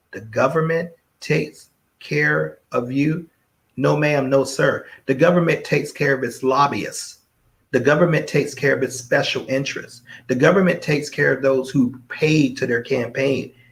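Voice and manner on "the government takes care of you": very slow, deliberate, drawn-out, word by word. Speaker repeating a phrase for listeners who missed it, said real slow. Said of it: "Let's say that real slow".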